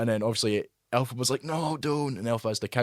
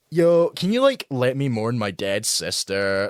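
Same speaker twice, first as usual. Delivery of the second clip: put-on slow, listless, bored teenager voice; 4 dB louder than usual. Mocking how a character sounded after her sister died; imitating a bored teenager. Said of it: "she sounded like a bored teenager".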